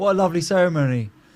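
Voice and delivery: really sarcastic, loud, put-on fake-sweet tone. Acting out what to say at a disliked wedding: put-on sarcastic tone. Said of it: "Go and be really sarcastic with everyone".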